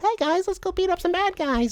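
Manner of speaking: very high, sweet-sounding voice. Imitating Tom Holland playing Batman: sweet-sounding Tom Holland voice. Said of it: "all sweet sounding".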